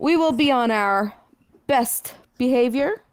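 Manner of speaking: quizzical, half-questioning tone with rising pitch. Voicing a character promising the others good behavior: questioning tone. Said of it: "She says it in a questioning tone".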